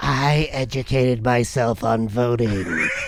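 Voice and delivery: very slow, low, half-whispered nerdy voice. Joking about a nerd half-whispering in someone's ear: put-on nerd accent, half-whispered. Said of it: "It's like a nerd accent".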